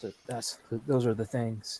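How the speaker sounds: quiet, quick, hushed under-the-breath voice. A player speaks as their character in the game, hushed tone. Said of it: "I say in a hushed tone".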